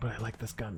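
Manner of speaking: whispering. Commenting on a weapon while playing, quietly and to oneself, whispering. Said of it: "I don't know why I'm whispering".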